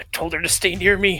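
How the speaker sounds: muttered under breath. In a tabletop game, a character sees another go down in combat, muttered under breath. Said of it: "just mutter under her breath".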